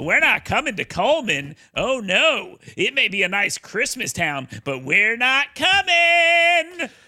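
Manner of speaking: mocking put-on voice with big pitch swings. Quoting a TikTok user who smeared a town, in a mocking imitation voice. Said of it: "I'm doing the voice here".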